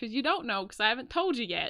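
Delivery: sudden shift into Southern American accent. Explaining a point to another speaker, slipping into a southern accent. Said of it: "I just went into a southern accent".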